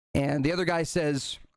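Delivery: normal talking voice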